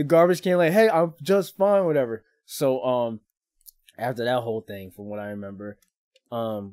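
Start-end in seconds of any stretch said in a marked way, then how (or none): 0.7-1.9 put-on loud, raised hollering. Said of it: "I'm yelling in the garbage can as I'm puking".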